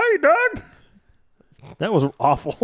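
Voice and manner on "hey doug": put-on cartoon voice, much higher pitched. Trying out cartoon character voices with friends, Skeeter voice. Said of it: "Let me see if I can do Skeeter".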